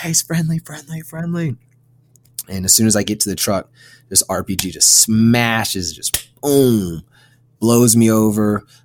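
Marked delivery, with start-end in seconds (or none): 0.0-1.6 mock raised yell, pitched high, repeated. Retelling running behind a firing truck, calling to a buddy: retelling own yell.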